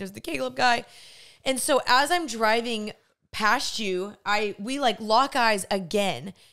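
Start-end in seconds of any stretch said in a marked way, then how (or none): 0.0-0.8 flustered, nervous, panicked, alarmed blurt. Retelling seeing someone while driving away: retelling own panicked words. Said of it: "getting nervous. I start panicking".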